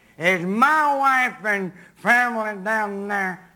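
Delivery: put-on sloppy, slurring drunk speech, low. Retelling what a drunk man said when he phoned one Sunday morning, imitating a drunk man. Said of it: "and drunkenly he said".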